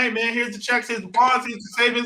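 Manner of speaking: usual speaking voice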